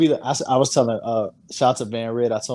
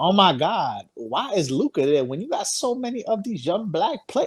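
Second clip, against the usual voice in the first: complaining auntie voice, high and slow; 8 semitones higher than usual. Retelling a social media complaint about the cover: imitating an auntie voice. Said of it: "Why did you do that auntie voice".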